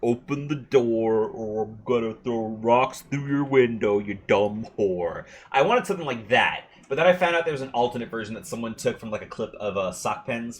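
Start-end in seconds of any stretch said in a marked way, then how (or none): 0.0-5.2 slow TV host voice, every word drawn out. Retelling a dog video's line done in Doctor Phil's voice. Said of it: "in the voice of Doctor Phil".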